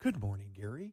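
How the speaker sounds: pleasant, sugary, sweet female voice. Retelling how the car reads a brother's insulting text: imitating a sweet woman's voice. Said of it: "so it comes in a woman's voice".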